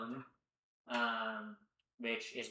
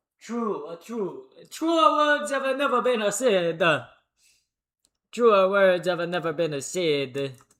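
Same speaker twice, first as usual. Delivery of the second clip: very loud, high, badly put-on Italian accent; 7 semitones higher, 12 dB louder than usual. Reacting to a remark about making italian food with love, in a bad fake italian accent. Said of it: "I'm doing this bullshit fake ass Italian accent".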